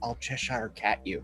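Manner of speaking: whispered line. A storyteller quotes what a man said in the story, retelling a whisper. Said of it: "He just whispers".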